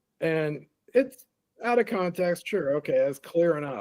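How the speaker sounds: usual speaking voice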